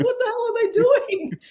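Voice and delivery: very high, shrieked, squealing outburst. Retelling a screening where everyone reacted: imitating screaming at a screen. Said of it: "We're all screaming at the screen".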